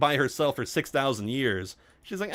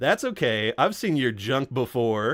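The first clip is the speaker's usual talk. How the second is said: put-on suggestive, flirty, wink-and-nudge tone. Retelling a character's reply in an episode: imitating a suggestive wink-and-nudge line. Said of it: "you said it with, like, a wink and a nudge".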